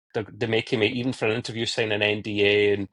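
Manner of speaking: ordinary talk, nothing marked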